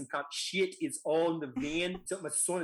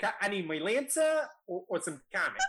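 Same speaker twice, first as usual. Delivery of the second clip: Boston way of talking; 3 semitones higher than usual. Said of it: "don't judge my accent on this".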